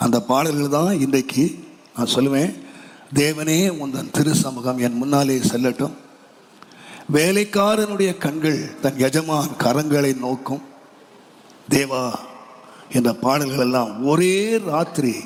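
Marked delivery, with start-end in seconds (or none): none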